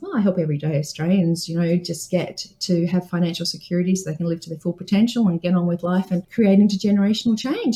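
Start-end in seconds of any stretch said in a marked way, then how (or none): none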